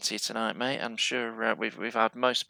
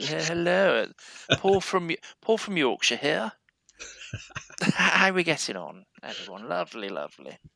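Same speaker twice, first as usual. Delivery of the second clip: put-on posh southern accent, swooping; 6 semitones higher, 3 dB louder than usual. A Yorkshire speaker living in London demonstrates his posh pretend southern accent. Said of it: "I talk posh like this".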